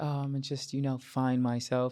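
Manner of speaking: soft, nonchalant tone. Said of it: "seems so, like, nonchalant".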